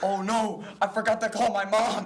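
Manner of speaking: put-on yelling. Retelling how a friend yelled on set: imitating someone yelling.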